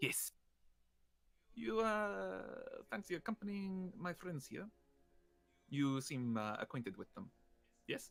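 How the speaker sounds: sly, sidelong delivery. Voicing Anastasia asking a kobold to accompany the players: sly, voicing Anastasia. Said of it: "She kind of gives him this, like, sly grin".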